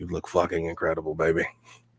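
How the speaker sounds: close, soft, hushed half-whisper. Voicing a character greeting a player at a party: half-whispering. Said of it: "whispers in your ear".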